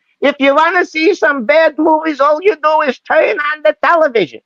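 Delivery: very high-pitched, funny-sounding voice. Quoting a producer from an old interview clip: Sam Goldwyn voice. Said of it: "And this is how he talked, like this".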